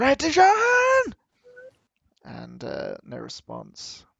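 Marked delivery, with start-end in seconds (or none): 0.0-1.1 very high, shrill, very loud scream, drawn out. Voicing a woman calling her husband: screaming a name loudly. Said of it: "She screams really loudly".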